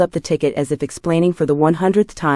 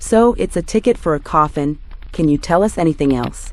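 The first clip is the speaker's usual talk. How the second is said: ordinary delivery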